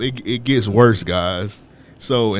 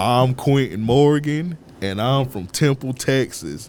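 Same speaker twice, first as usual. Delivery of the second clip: unhurried, plodding, deliberate delivery. Retelling a classmate introducing himself to the class: imitating Quentin Morgan talking slow. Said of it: "He was just talking so slow".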